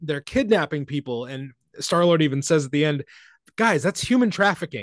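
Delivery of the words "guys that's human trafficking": plain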